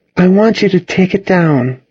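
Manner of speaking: very high-pitched, coolly detached voice. Narrator reads a woman answering someone's apology, cool. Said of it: "Cassidy said coolly".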